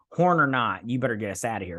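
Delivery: ordinary delivery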